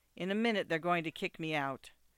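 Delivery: ordinary delivery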